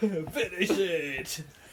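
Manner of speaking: mock battle cry, slow, drawn-out and high.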